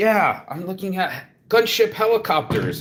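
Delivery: put-on heavy, thick Indian accent, pitched very high. Retelling a phone call with a customer, quoting the customer's thick Indian accent. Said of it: "he had a really tough Indian accent".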